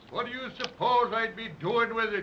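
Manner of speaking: ordinary delivery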